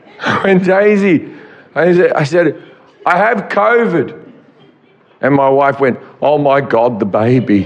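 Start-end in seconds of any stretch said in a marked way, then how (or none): 3.1-4.3 frantic, panic-stricken speech. Retelling phoning his wife from his car, acting out a panicked call. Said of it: "I was sitting there panicking".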